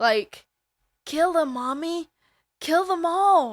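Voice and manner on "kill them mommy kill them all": put-on high, loud little child voice. Telling another viewer about a film scene, doing Jason's kid voice. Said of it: "she also talks with Jason's kid voice".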